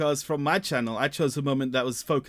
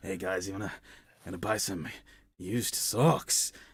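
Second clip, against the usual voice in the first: low, hushed dodgy salesman voice; 6 semitones lower, 5 dB quieter than usual. Reminding a friend how they sounded in the cave, in a dodgy salesperson voice. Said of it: "a dodgy salesperson type voice".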